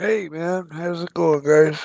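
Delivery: sleepy, just-woken-up voice. Greeting the others: sounding like just woke up. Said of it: "you sound like you just woke up".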